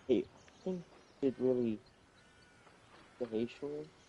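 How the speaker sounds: hushed whisper, very quiet. A player speaking in character during a game, whispering very quietly. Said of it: "you gotta speak up".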